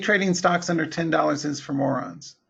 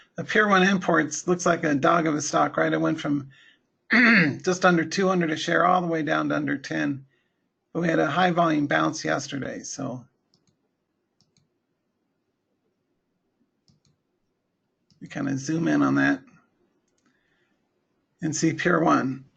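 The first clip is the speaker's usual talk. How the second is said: worn-out, hoarse voice. Going over a stock chart for viewers, with a shot voice. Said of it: "my voice is shot".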